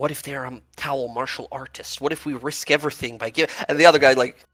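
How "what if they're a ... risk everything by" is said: soft, quiet half-whisper. Voicing a guard who worries about a prisoner: half-whispering guard.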